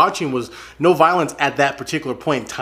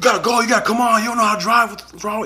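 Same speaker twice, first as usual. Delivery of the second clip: hurried, hectoring, pitched-up yell; 8 semitones higher than usual. Retelling what a man in a red truck yelled at them: retelling a driver's yell. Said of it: "he yells at me and says".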